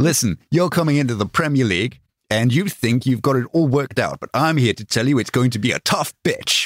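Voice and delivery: put-on tough New Jersey street-cop accent. Reading out someone's quote to the others, in a new jersey cop voice. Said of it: "Why is he talking like a New Jersey cop?".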